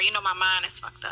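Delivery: normal talking voice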